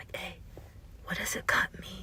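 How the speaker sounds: hushed, very quiet whisper. Retelling what a guy in the speaker's reading group asked, retelling a whisper. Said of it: "he whispered".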